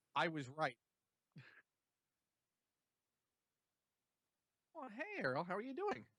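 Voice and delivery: bright, chipper voice. Greeting errol, enthusiastic. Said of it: "I don't know why I sound so enthusiastic".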